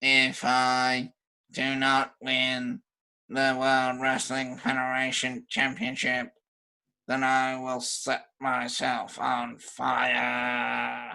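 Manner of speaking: robotic wrestling promo voice, word "fire" drawn out. Recapping a wrestling promo package, quoting the wrestler: robotic Kane voice. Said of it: "It is the robotic Kane".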